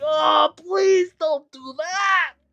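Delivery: pleading, put-on dwarf character voice. Voicing the dwarf begging the players to stop: pleading dwarf voice. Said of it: "the dwarf".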